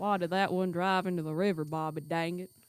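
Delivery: cartoonish Texan father voice. Mimicking how their dad asks questions, Hank Hill voice. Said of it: "my voice is just becoming Hank Hill".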